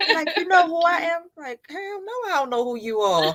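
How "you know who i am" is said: put-on New York accent, pitched high. Retelling what a man said on meeting her mother, in a New York accent. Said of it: "New York accent".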